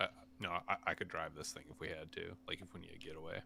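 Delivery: rapid, quick, hushed half-whisper. Leaning over to a crewmate about piloting the skiff: half-whispering. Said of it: "kind of whisper".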